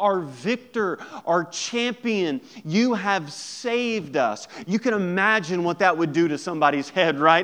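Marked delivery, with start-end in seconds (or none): none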